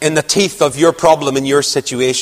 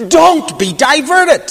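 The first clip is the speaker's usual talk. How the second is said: slow, high-pitched Scottish accent. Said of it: "That's the accent here".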